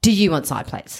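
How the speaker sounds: imitated snippy, attitude-laden tone. Retelling what another person asked, mimicking a snippy tone. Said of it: "with attitude".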